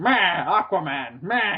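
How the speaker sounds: evil cartoon villain voice. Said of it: "He sounds like Skeletor".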